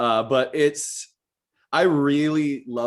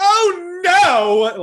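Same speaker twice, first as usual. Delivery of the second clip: very high, loud, shrill, flamboyant fit of temper; 9 dB louder than usual. Showing how the flamboyant hairdresser character sounds when pissed off. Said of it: "when he gets pissed off".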